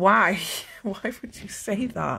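speech through laughter. Reacting to a grim fortune teller's prediction, laughing while talking. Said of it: "I'm not laughing 'cause it's funny".

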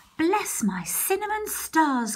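startled, high, cried-out exclamation. Narrator reads a woman chasing the gingerbread man around the kitchen, crying out. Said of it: "cried Mrs".

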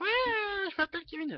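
put-on squeaky, very high, loud young kid voice. Demonstrating a thin voice the speaker dislikes, in the voice of a 12-14-year-old kid. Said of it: "je fais bien la voix d'un gamin de 12-14 ans".

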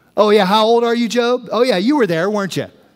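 dry, mocking, sarcastic, needling tone. Retelling the Bible story, imitating God sarcastically. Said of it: "He gets real sarcastic at one point with him".

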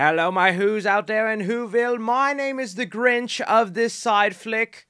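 put-on British accent. Opening a movie news video, the host greets viewers in a put-on british accent. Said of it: "I went British there for a second".

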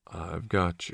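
hushed, very quiet, soft, low voice. Reading Rhys speaking to Cornell while massaging him, soft voice. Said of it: "keeping his voice soft".

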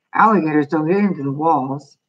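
ordinary delivery

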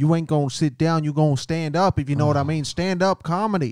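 loud, stern commanding authority voice. Acting out the prison warden who pushes an inmate into stand-up: playing the prison warden. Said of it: "The warden. He's like".

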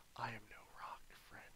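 very quiet, hushed whisper. Voicing a stone that speaks into a player's mind: whispering into someone's mind. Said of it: "And it whispers into your mind".

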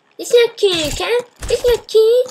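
exaggerated, very high, put-on cartoon voice. Commenting on a video that is not even good, in an Eric Cartman voice. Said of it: "The only good thing I can say in my Eric Cartman voice is".

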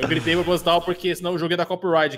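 plain

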